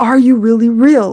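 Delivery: mock-angry voice. Recalling calling out to God in the past, retelling an angry question. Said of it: "It was more like an angry tone".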